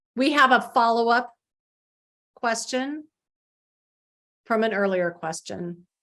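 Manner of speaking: very slow, halting, breaking inside phrases. A meeting host reads a follow-up question for the Spanish simulcast, speaking even more slowly. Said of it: "I'm going to try and speak even more slowly".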